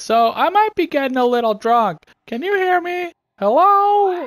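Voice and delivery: mock very high, loud, rising yell. Retelling what Mary yelled back after walking out: imitating Mary yelling. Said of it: "just yelled back".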